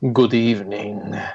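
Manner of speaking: dark, menacing, sinister count voice with Transylvanian accent. Greeting the other speakers after being introduced: sinister Count Duckula voice. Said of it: "a sinister [name] there".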